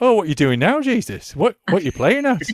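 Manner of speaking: put-on Yorkshire accent. Showing how the disciples are voiced when telling Gospel stories, in a Yorkshire accent. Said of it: "I tend to put the disciples in a Yorkshire accent".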